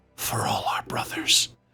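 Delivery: quiet whisper under the breath. Looking up at an enemy before crushing a symbol, whispering under breath. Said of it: "I just whisper under my breath".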